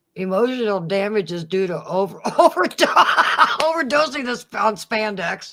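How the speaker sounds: words spoken through laughter. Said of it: "I can't stop laughing tonight".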